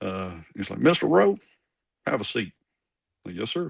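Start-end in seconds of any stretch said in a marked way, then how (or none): 0.8-2.5 put-on broad Southern Arkansas accent, laid on, loud and high. Retelling a meeting in Waldo's office, imitating Waldo's thick Arkansas accent. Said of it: "he had that really thick Southern Arkansas accent".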